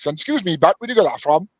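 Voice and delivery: put-on Welsh Valleys accent. Speaker retells what he said to a bloke holding a can: Welsh Valleys accent. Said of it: "or my Valley's accent".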